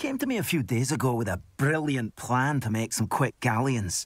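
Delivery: put-on unconvincing Scottish accent. Voicing a game character who describes a money-making plan: bad scottish accent. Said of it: "Scottish accents in this game are hilariously bad".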